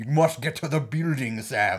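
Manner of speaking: poorly faked robot voice. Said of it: "I just remember from the first Transformers movie".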